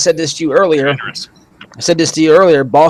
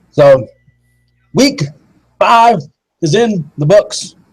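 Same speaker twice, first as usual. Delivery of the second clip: slow, robotic, machine-like voice; 3 semitones higher than usual. Host opening the week-five discussion with his co-host: robot voice. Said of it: "I don't know why I just said that like a robot".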